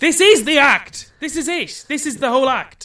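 high, loud, exasperated yelling.

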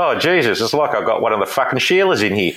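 amused, ribbing, laughing through the words. Retelling the boss's reply when the speaker cried while resigning: imitating boss laughing while talking. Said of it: "He's laughing at me. He's going".

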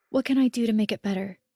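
plain

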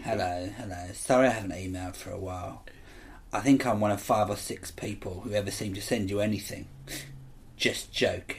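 low, hushed, sleazy, creepy, seedy voice. Reading out an email from a man, a speaker does him as a seedy pervert voice. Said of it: "I'm going to do him as a seedy pervert".

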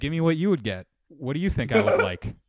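ordinary talk

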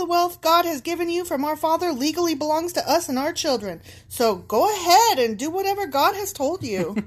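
sassy, cheeky tone full of attitude. Reading out a message someone sent to their dad, with put-on sass. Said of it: "I really gave them some sass".

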